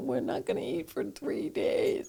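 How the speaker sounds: put-on crying, whispered, soft and breathy. Retelling being stuck broke in a pub with her husband: imitating herself crying. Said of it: "And I'm crying and going".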